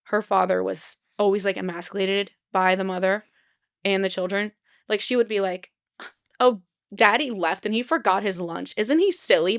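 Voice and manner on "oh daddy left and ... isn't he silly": ordinary talk, nothing marked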